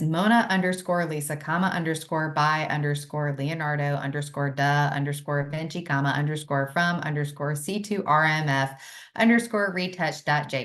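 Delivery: robotic, fast, machine-like screen-reader voice. Reading an image file name the way a screen reader would, robotic and fast. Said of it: "attempt to read this like a screen reader would".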